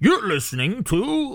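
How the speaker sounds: radio-announcer voice. Retelling how a radio show opens: imitating deep-voiced announcer. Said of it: "the deep voice guy".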